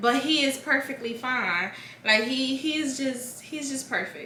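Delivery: tearful, crying voice, talking through tears. Telling a birth story, while crying. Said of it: "I'm crying".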